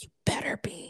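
muttered under the breath. Retelling a remark made about him, retelling an under-breath remark. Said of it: "i said under my breath".

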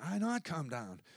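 put-on soft, quiet voice like a small kid. Retelling what a little kid said: imitating a little kid. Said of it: "what the little kid said".

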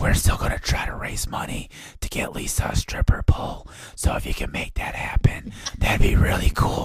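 secretive, hushed whisper. Show host gives Patreon members an aside, whispered. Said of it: "I'm going to whisper this".

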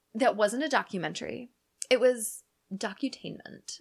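ordinary talk

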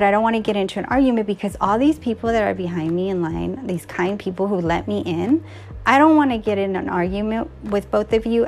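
usual speaking voice

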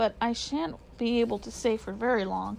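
ordinary delivery, nothing marked

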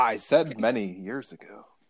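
dark, mysterious, foreboding, ominous tone. Correcting the other speaker about when it happened, mysterious and ominous. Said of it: "He said it mysteriously and ominously too".

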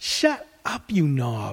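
hissed close and low, straight into the ear. Reading a companion sneaking through dark shrubs, hissing in someone's ear. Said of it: "he hisses in my ear".

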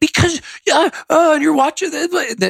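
sputtering rant.

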